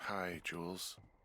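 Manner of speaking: drowsy, tired, worn-out, sleepy voice. Answering a teasing radio greeting by saying hi to jules, tired voice. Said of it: "you sound tired".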